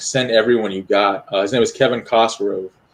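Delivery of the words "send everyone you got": plain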